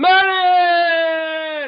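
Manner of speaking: shrill, booming, very high, drawn-out delivery. Doing an impersonation of Mo for the others: Mo impersonation. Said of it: "here's my best Mo impersonation".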